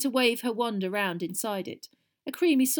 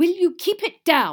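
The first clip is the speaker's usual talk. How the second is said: booming, very loud, high bellow; 7 semitones higher, 8 dB louder than usual. Percy yells down from a second-floor window at the clatter below, bellowing. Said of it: "he bellowed".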